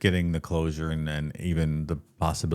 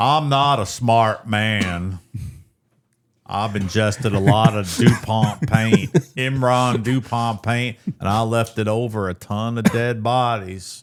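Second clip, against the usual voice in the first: put-on Southern accent, loud and pitched up; 6 semitones higher, 6 dB louder than usual. Riffing on a man who ate paint chips: Forrest Gump voice. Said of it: "I like a Southern accent".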